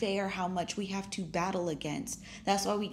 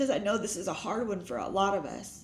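teary, emotional voice catching and choking up. Speaker talks about a years-long family struggle, getting emotional. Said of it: "I'm getting emotional".

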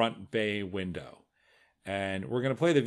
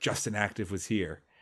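put-on whisper; 3 dB quieter than usual. Narrating a shooting video, imitating the shooter's whisper. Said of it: "you hear him whisper".

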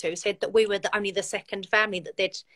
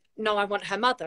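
plain

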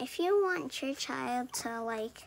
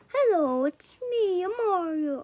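loud, slow, pitched-up cartoon voice; 6 semitones higher, 8 dB louder than usual. Suggesting a plumber in costume who talks like Mario: Mario voice. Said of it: "I only know Mario voice".

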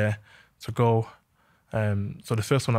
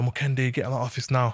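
put-on bossy, stern shout calling out; 2 semitones higher than usual. Retelling how the manager called down the corridor: imitating a manager shouting. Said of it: "Just shouts down the corridor".

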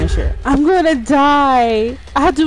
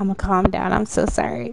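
ordinary delivery

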